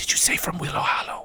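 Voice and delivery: loud, carrying, hushed stage whisper. Voicing the Mayor as she looks over her shoulder, in a loud whisper. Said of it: "She kind of whispers loudly".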